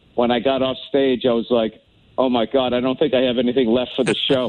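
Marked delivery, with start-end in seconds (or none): none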